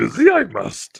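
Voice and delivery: creaky, swooping character voice. Trading lines with a listener who praises the impression: Yoda voice. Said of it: "you could be a voice actor for the character Yoda".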